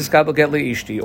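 usual speaking voice

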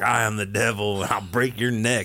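put-on devil voice. Picturing a scene and acting out the devil's reply, imitating the devil. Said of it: "and then it's like".

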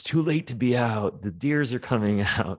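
put-on yelling in a high voice. Retelling how a bedridden man reacted to a late ride: imitating someone yelling. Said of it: "he started yelling".

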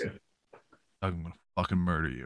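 hushed, very soft, very low voice. Retelling how an episode opened with Luke threatening Doug, imitating Luke speaking real soft. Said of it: "you just hear Luke like real soft".

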